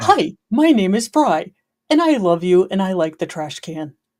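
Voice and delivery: cartoon talking-dog voice. Voicing a dog's thoughts: Dug from Up voice. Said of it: "every dog has Doug's voice from Up".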